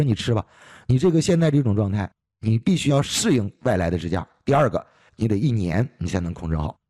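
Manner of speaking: plain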